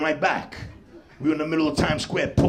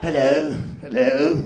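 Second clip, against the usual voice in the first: put-on English accent. Comedian telling of two women he met outside, imitating an English accent. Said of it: "with that English accent".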